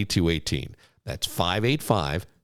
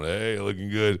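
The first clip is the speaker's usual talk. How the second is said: put-on dumb-guy voice, slower; 3 dB quieter than usual. Imagining a married guy commenting on a selfie, dumb guy voice. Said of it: "I hear it in that dumb guy voice".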